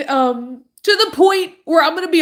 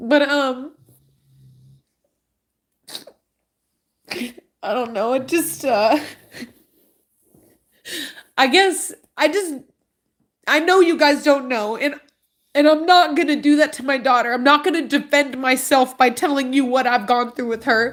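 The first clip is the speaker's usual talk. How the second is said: crying while talking, tearful. Telling viewers what was learned about a daughter's feelings, crying while talking. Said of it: "I hate to be crying like this".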